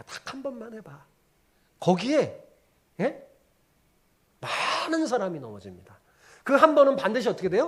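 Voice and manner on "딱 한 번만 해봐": very hushed, gentle, coaxing tone. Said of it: "점잖게".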